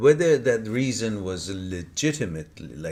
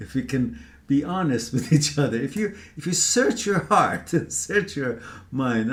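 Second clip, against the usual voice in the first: speaking through laughter, higher; 6 semitones higher than usual. Responding to a younger friend's email, laughing while talking. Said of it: "I'm sorry if I'm laughing".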